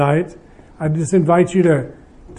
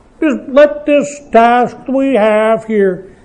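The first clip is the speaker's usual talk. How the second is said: very cynical voice, slow and higher. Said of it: "in my very cynical voice".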